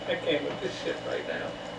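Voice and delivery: soft, unvoiced, exasperated whisper.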